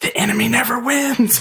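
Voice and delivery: slow, drawn-out, high stage whisper in character. Playing a character who half-whispers to a choked enemy: half-whispering in character. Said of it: "I'll whisper at him".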